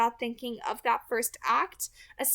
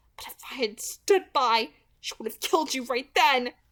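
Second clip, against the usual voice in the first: hissing in frustration; 4 dB louder than usual. Narrator reads a character warning the listener she would have been killed, frustrated hiss. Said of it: "she hissed with frustration".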